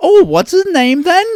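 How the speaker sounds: put-on Cockney accent, very high and very loud. Joking about saying a name with an English accent, My Fair Lady Cockney accent. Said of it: "Dark Crystal creatures as Cockney".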